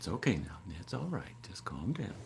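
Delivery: soft, calm, soothing wise man voice. Describing the inner presence that talks to them, the speaker uses a soothing wise man voice. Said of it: "in my wise man voice, very soothing".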